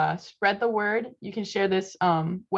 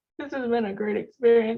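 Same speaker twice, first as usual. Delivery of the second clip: crying voice, much higher; 4 semitones higher than usual. Ending the meeting and thanking the group for coming, crying while speaking. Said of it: "I'm crying".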